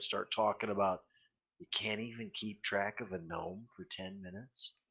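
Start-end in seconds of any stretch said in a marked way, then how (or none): 1.6-4.7 soft, muttered jab under the breath. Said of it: "kinda under my breath, right where she can hear it".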